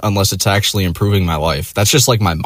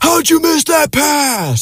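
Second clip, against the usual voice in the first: shrill, very high-pitched, drawn-out scream. Imitating an upstairs neighbor screaming at sports: imitating a neighbor screaming. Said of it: "I'll hear him scream randomly".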